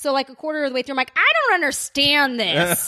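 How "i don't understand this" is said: grumpy, cranky, very slow, drawn-out whine. Retelling own complaint a quarter into the movie: imitating own cranky complaint. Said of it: "I was cranky".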